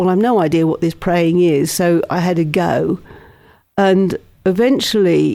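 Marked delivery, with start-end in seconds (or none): none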